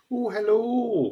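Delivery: put-on grand Scottish accent. Asked to give their best Scottish impression: Mrs. Doubtfire Scottish accent. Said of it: "give us your best um, Scottish impression though".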